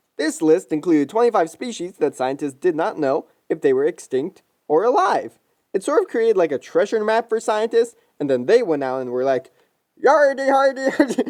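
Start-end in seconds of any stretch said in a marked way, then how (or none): 10.1-11.3 high-pitched, swashbuckling pirate voice. Explaining a lost species list, imagining biologists as pirates: pirate voice. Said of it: "biologists talk like pirates".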